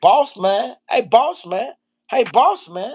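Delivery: repeated casual calling out. Retelling how coworkers fresh out of prison talked: imitating coworkers fresh out of prison. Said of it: "they love to say".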